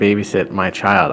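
plain

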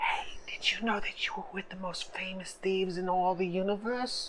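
soft, hushed, secretive whisper. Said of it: "Why are you whispering?".

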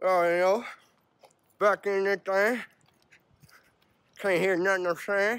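muffled toothbrush-in-mouth speech. Speaker getting ready to leave the house, talking with a toothbrush in mouth. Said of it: "Got my toothbrush in my mouth".

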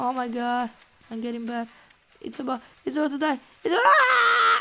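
sheer frantic panic, with a drawn-out ah. Playing a game as a character is about to die: panicking. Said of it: "I'm panicking, I'm panicking".

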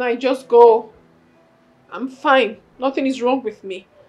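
crying, tearful voice. Telling Nai to leave while insisting nothing is wrong: crying. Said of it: "why are you crying?".

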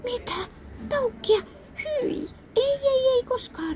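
very high, shrill, drawn-out horrified cry. The trickster, turned into a cuckoo, answers the real cuckoo with a horrified shout. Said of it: "huusi huithapeli kauhistuneena".

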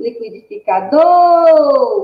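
called out, final do stressed. Calling out a person named liquidificador in a game, stress on final syllable do. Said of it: "você vai chamar essa pessoa... a sílaba tônica da palavra liquidificador é do".

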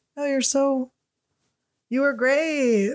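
slow, clumsy, badly acted, insincere tone. Acting out praising a friend after their film: fake praise, badly acted. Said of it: "then be a bad actor".

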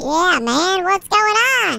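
voice suddenly shot up, very high-pitched. Answering a friend who asks if he's a farmer, suddenly higher voice. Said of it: "I feel like your voice just got higher".

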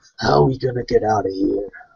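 muttered half under the breath, aside. Posing a question indirectly to Raven and Kira, muttered over the shoulder. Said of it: "kind of under my breath or kind of over my shoulder".

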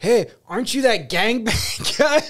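hollering voice. Retelling a stranger calling across a bar porch: imitating someone yelling. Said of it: "yells at him".

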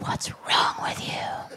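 hushed, soft whisper. Talking about riders who won't speak to their driver, whispering.

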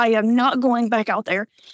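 usual speaking voice

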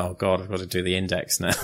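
ordinary talk

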